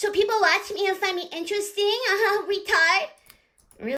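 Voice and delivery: very high-pitched mocking put-on voice. Mocking the person being addressed by talking in their voice, mocking imitation of Nanny. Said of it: "Talking like this in your voice".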